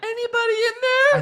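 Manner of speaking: put-on woman's voice, very high-pitched. Retelling someone knocking on a door: imitating a put-on woman voice. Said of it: "he does a woman voice and he's like".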